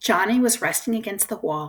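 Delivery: plain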